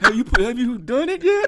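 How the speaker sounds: put-on tearful voice. Retelling a phone call after finding out about cheating: imitating own past crying. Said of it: "I was on the phone crying".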